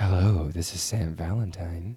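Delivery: put-on 900-number phone-sex-line voice. A host, told their voice sounds like a 900 number, playing it up in that voice. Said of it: "your voice sounds somewhat like a 900 number today".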